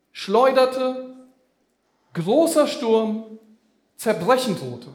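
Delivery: stress on schleuderte, großer Sturm, zerbrechen. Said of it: "Achtet mal auf die Worte".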